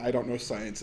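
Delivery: ordinary delivery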